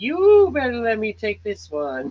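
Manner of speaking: slow, high, loving motherly mama voice. Retelling a lady's words, imitating the nice lady's voice. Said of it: "She's a really nice lady".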